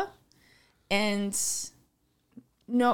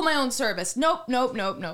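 usual speaking voice

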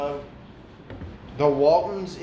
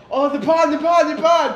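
very high, loud mock excitement. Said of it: "I'm like".

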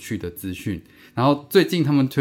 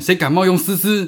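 mock very angry, furious, high-pitched outburst; 8 semitones higher, 4 dB louder than usual. Telling a joke, voicing a person whose Facebook account was stolen: acting out a furious outburst. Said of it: "非常非常生气的说".

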